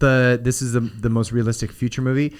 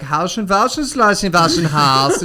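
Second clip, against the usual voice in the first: mock German DJ voice, higher-pitched; 5 semitones higher, 3 dB louder than usual. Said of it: "They're like".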